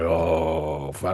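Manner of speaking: put-on drawn-out oh with dread sinking in. Retelling facing a huge general in a vision: retelling own frightened reaction. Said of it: "I'm shitting myself".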